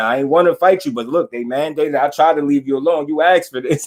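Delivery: normal talking voice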